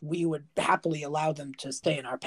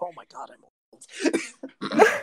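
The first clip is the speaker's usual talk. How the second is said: very slow, sinking tone of dread; 2 semitones higher than usual. Voicing a character who realizes he is old: existential dread. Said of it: "this existential dread moment".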